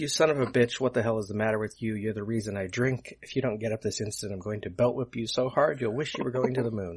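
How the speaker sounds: ordinary talk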